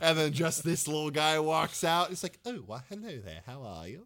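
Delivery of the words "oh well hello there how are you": soft, overly cordial, genteel, super-polite tone. Describing a little guy who walks out, mock super-cordial greeting. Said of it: "super cordial".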